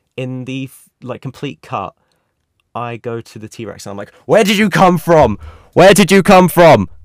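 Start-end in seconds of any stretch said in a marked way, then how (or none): 4.3-6.9 full-lunged, very loud, high shout. Retelling shouting at a toy T-Rex, retelling a shout. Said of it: "I'm like shouting at this toy".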